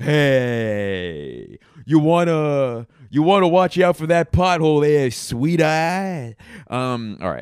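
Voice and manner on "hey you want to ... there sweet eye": bad put-on New York accent, loud and drawn out. Trying out unpracticed accents, the speaker warns someone about a pothole: bad new york accent. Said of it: "New York accent".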